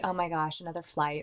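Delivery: plain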